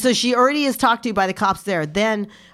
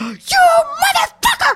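re-enacted mock screaming, much higher pitch; 7 dB louder than usual. Retelling screaming at a woman who pulled the speaker from a car; retelling own screaming. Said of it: "I'm like screaming at her".

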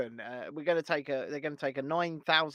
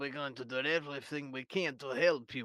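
soft, put-on Russian accent; 8 dB quieter than usual. Mocking Nicola Sturgeon welcoming the Ukrainian consul general: Russian-sounding Nicola Sturgeon impression. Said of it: "Why do you sound Russian".

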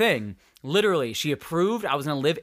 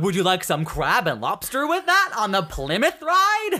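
put-on high-pitched, sing-song voice; 5 semitones higher, 3 dB louder than usual.

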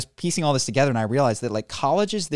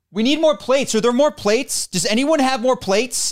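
acted, very high, loud, raised shouting; 12 semitones higher, 5 dB louder than usual. Retelling what a man at the gym did, imitating someone shouting. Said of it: "he starts shouting".

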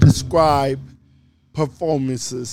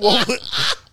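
mock drowning impression, whispered and laughing. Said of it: "that was my impersonation of him falling off into the ocean".

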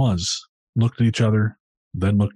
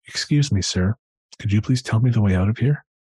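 put-on soft, gentle British accent. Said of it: "in a soft British accent asked my dad".

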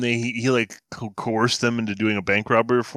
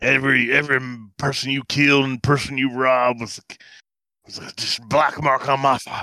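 odd, weird put-on cowboy accent; 3 semitones higher than usual. Retelling what a cowboy movie character said, in a weird accent. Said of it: "I'm giving him such a weird accent".

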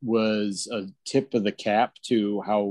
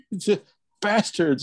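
put-on screaming, higher pitch; 10 semitones higher, 3 dB louder than usual. Retelling throwing stuff at the TV at sixteen: imitating own past screaming. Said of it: "screaming at the, at the T V".

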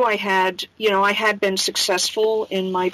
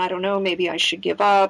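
acted-out tearful crying. Recalling borrowing money from a friend, the speaker is imitating own past crying. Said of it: "I was like crying and saying".

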